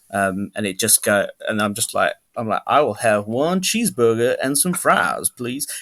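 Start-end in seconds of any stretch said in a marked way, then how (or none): 2.6-5.6 put-on lingering Southern accent slipping into the voice. Retelling ordering at McDonald's on the Sunday, in a lingering Southern accent. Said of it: "turning it back off on the Sunday".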